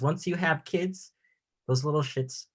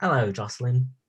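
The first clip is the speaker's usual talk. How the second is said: put-on New Zealand accent. Speaker asks friends about talking around the house, then demonstrates a New Zealand accent. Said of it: "talking in a New Zealand accent".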